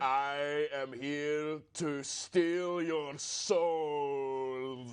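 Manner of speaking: spooky, menacing villain voice, drawn out. A player rolls an intimidation check in a game, using the scariest voice possible. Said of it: "Try try being the scariest you can be right now using that voice".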